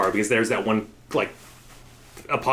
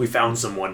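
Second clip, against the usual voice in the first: ordinary delivery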